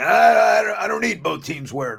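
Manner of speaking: very high, squeaky, rough, creaky put-on voice, stumbling stammer. Imitating a friend's take on alternate uniforms: imitating John. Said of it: "that's my John impersonation".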